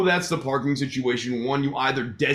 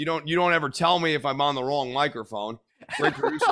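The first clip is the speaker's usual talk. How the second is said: normal talking voice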